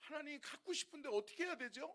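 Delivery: high, put-on pleading voice through tears. Retelling a dream, asking god what to do: retelling own crying plea. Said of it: "막 제가 막 울면서".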